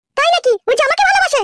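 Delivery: high-pitched woman's voice.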